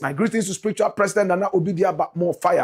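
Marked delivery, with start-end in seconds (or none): none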